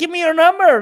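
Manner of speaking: shrill, very high shout at full volume. Translating a clip where he yells at her: imitating someone yelling. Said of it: "he's yelling at her".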